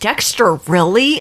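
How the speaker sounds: ordinary talk, nothing marked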